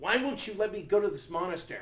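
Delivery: toned-down, subdued screaming outburst. Recalling wanting to go to a monastery, re-enacting screaming at his wife: retelling screaming. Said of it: "I was screaming at my wife".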